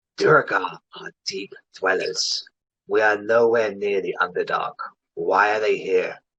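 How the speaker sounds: hushed whisper. A game master voicing a character who leans close to a player: whispering. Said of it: "so he whispers to you".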